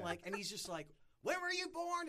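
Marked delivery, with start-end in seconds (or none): 1.2-2.1 play-acted, shrill, very high-pitched screaming. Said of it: "he's screaming at me".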